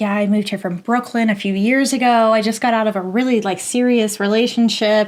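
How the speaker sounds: ordinary talk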